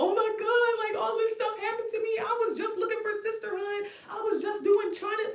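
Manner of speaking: mock weepy, very high crying voice. Retelling how someone cried to the speaker on the phone, imitating someone crying. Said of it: "on my fucking phone crying about".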